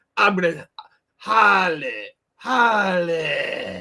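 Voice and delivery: very slow, loud drawl, Harley stretched and hanging. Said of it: "slide and hang".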